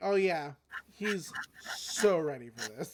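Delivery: dripping sarcasm oozing off every single word. Retelling a scene where a character walks away: imitating a sarcastic retort. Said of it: "dripping with sarcasm".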